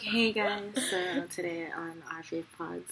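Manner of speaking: mock seductive voice, laid on thick. Podcast host mimics her co-host's show intro in a mock-seductive voice. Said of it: "who are you trying to seduce?".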